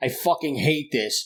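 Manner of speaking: mock-angry, furious dad voice. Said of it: "he is so pissed off".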